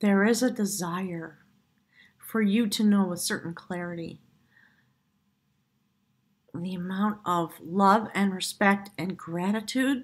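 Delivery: choked up, words catching, struggling to speak. Giving a card reading to the listener, choked up. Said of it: "I'm having trouble speaking because I'm so choked up".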